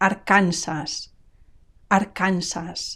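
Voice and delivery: Spanish pronunciation of "arkansas", final s not dropped. A spanish speaker demonstrates state names in spanish, spanish pronunciation, final s kept. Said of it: "notice also the final S".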